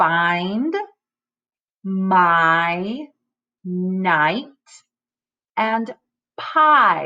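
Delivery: long i vowel stretched and stressed in each word. Showing learners how words sound: stressing the long I sound. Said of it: "use the long I sound in these words".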